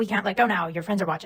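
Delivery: ordinary delivery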